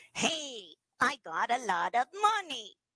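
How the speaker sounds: nasal character voice pushed through the nose. Teaching how a character voice hides a substitute sound, say the example in a nasal character voice. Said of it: "let's put it in that nasal again".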